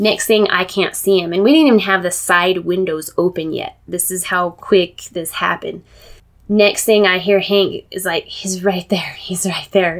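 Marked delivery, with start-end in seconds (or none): 8.2-10.0 stage whisper, half-whispered. Retelling how Hank warned that the bear was close: imitating someone half-whispering. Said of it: "And he's whispering".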